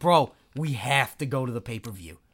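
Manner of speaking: put-on South Philly bro accent, very low. Showing the 1990s South Philly accent of the crowd, South Philly accent impression. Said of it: "This is my Philly impression".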